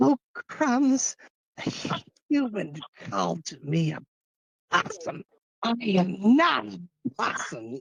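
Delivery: put-on character voice, high, slow, drawn out. Trying a voice impression for the others: Moxie voice. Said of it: "I like trying to do, like, a little moxie".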